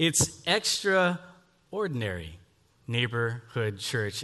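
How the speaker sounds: extraordinary and neighborhood stressed and drawn out slowly.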